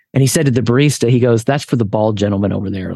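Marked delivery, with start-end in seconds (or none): 1.4-2.9 mock under-breath mutter, lower pitch. Retelling a store owner speaking to the barista, retelling an under-breath remark. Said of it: "like under his breath".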